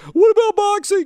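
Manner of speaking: shrill, loud, very high squeaky caricature voice. Arguing about fighting in hockey, doing a Triggered Guy voice. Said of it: "That's my voice for Triggered Guy".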